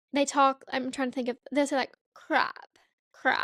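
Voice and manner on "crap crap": exaggerated crunchy r sound. Explaining a speech habit to the other speaker, demonstrating Kourtney Kardashian's crunchy R. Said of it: "the crunchy R is what people call it".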